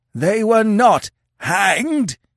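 put-on shrill, very high old chief's screech. Narrator reading the old chief addressing Conan before the crowd, screeching old chief. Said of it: "he screeched".

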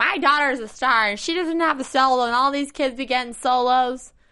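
slight put-on Philadelphia accent. Quoting a mother's comments last week about her daughter, with kind of a Philly accent. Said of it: "you kind of had that Philly accent in there".

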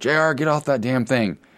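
acted high-pitched, light, mild yell. Retelling a husband yelling at JR on his iPad in another room, retelling a yell. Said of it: "and he's yelling".

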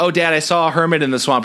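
plain

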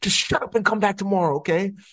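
put-on very high, snappish, thick New York accent. Retelling what a woman told them, the speaker quotes her in a thick New York accent. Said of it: "Her thick New York accent".

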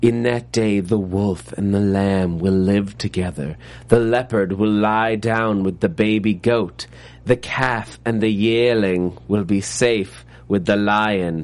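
comically creepy put-on voice, low and slow. Quoting what a woman read aloud from a passage: comically creepy put-on voice. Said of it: "mine was comical creepy".

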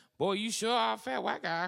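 very high, loud, quick, snappy comic quip. Retelling a commercial shoot, imitating Tommy's spot-on impression. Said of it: "does this spot-on impression".

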